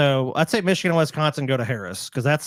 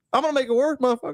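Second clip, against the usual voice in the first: high-pitched put-on Arkansas accent; 12 semitones higher than usual. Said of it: "I can put on that little accent there".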